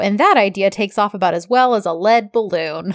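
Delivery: normal talking voice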